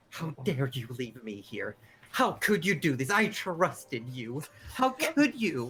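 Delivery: angry, scolding outburst, angrily going off. Voicing an abandoned owl who scolds her owner: Madeline going off angrily. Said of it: "you hear Madeline going off".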